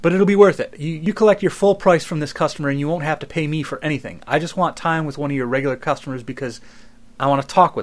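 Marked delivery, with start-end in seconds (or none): none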